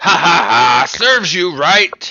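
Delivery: very loud, booming, high-pitched laughing dwarf voice. Narrator voicing a dwarf heard from a distant rooftop, in a laughing dwarvish voice. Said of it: "A very dwarvish voice ... laughing as he says".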